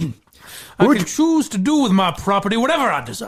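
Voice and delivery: put-on Southern accent. Performing a movie line after being asked: Leo DiCaprio Southern accent. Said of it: "the Leo Southern accent".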